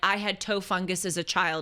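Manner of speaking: ordinary delivery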